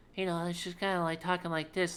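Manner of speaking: put-on innocent childlike voice. Describing how she voices Marcel, demonstrating an innocent childlike Marcel voice. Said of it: "unique inflection that she she has for Marcel ... innocent kind of kid like".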